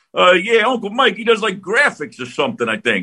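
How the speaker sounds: bad, high-pitched put-on New Jersey accent. Retelling a broadcast, the speaker quotes his nephew in a bad Jersey accent. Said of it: "that's not a great Jersey accent".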